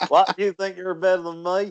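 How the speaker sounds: put-on Southern US accent, laid on thick. Teasing the other player after a wrong quiz answer, in a Southern American accent. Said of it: "I'm doing a Southern American accent".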